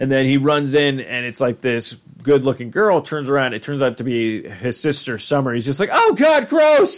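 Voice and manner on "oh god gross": put-on very high, panicky, grossed-out cry. Retelling a scene where Morty sees his sister: imitating Morty panicking. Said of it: "he starts panicking".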